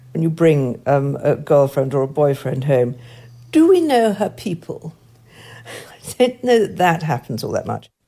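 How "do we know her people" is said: high, haughty, lofty upper-class posh tones. Recalling what people once asked about a partner brought home, in Lady Bracknell tones. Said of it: "in sort of Lady Bracknell tones".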